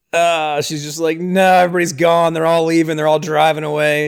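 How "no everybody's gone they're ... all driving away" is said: ordinary delivery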